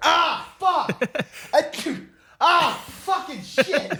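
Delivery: mock sneeze-broken swearing, very high and very slow. Teasing the other speaker about sneezing while making tea, imitating sneezing and swearing. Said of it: "just sneezing and swearing".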